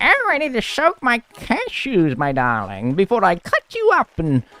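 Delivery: high, swooping storybook witch voice. Retelling what a man said, the speaker puts on a witch accent. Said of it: "it's really hard to do a witch accent".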